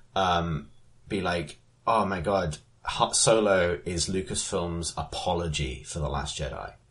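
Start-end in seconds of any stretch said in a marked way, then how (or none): none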